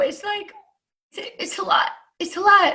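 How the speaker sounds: fighting back tears. Talking about people who stand their ground, holding back tears. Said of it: "I'm trying not to cry now".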